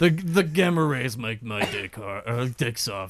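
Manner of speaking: monster character voice. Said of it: "Why am I talking like this?".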